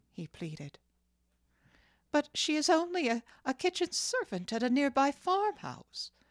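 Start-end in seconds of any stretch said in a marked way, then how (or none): 2.1-6.1 very high, raised, exclaimed protesting tone. A mother answers her son's plea, exclaiming. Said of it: "exclaimed his mother".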